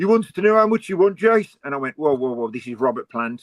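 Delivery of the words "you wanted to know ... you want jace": put-on strong Midlands accent, laid on, high and raised. Recalling a reply about copies of a book, the speaker quotes Steve Bull in his strong Midlands accent. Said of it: "in his strong Midlands accent".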